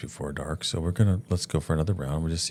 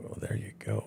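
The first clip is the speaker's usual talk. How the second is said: hushed whisper from the side of the mouth; 5 semitones higher, 9 dB quieter than usual. Retelling a quiet remark as a bear walks out close by: retelling a whisper. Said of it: "I kinda whispered out of the side of my cheeks".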